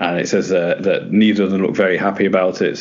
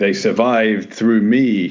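big, booming movie trailer voice; 3 semitones higher than usual. Retelling a line heard in a trailer: imitating a big booming voice. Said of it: "there's this big booming voice".

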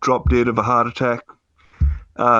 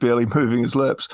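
normal talking voice

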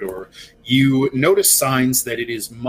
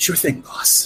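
hushed, soft, quiet whisper; 6 semitones higher than usual. Voicing an invisible companion answering a player telepathically: whispering. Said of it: "whisper telepathically to you".

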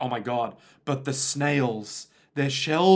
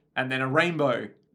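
usual speaking voice

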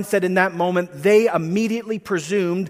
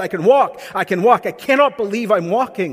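ordinary delivery

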